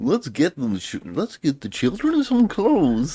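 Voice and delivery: very high, swooping, bad cartoon mayor voiceover. Imitating how the mayor in the cartoon talks: imitating the cartoon mayor's voice. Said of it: "the mayor talks like the mayor".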